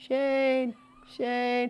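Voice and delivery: put-on high, far-off calling voice of an old woman.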